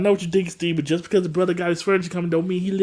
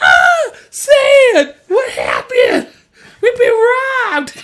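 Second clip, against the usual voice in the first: shrill, booming, swooping, very high, very loud scream; 10 dB louder than usual. Recounting a robbery as Steve finds the place trashed; imitating Steve screaming. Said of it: "the way Steve screamed".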